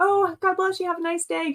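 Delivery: put-on very high, cheery service voice chirp. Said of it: "one of those, like, ... Chick-fil-A".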